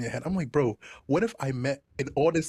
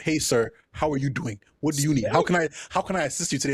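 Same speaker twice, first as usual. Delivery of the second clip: mock overly cordial, formally polite girl voice. Retelling how a girl who is done with you talks: imitating an overly cordial girl. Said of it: "how cordial a girl talks to you when she's done with you".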